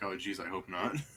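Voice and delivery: low, under-the-breath grumbling mutter. A wizard answering a question about a creature he's training, muttering to himself. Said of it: "He mutters to himself like".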